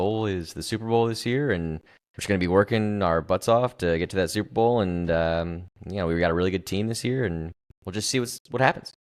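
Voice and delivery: low, flat monotone, droning. Show how Aaron Rodgers talks when he does interviews, in a monotone Aaron Rodgers voice. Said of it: "he's monotone".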